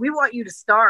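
ordinary talk

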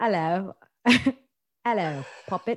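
bad, fake, put-on English accent. Retelling meeting a man from the uk, greeting him in a bad english accent. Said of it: "was that your English accent".

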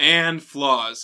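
word flaws leaned on with heavy emphasis. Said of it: "Emphasis on the flaws".

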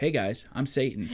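ordinary talk

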